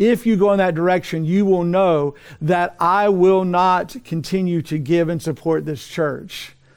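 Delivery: plain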